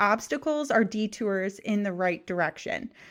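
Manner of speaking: ordinary delivery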